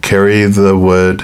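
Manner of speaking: plain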